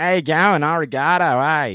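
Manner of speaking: full-on Australian accent, booming and very slow. Speaker shows how most people would do it as an Australian, full Aussie accent. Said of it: "let's go full Aussie".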